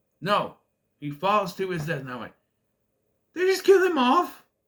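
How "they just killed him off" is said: very high, loud, shrill squeaky voice. Retelling watching a film where a character dies, the speaker quotes himself in a squeaky voice. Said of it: "In that squeaky voice".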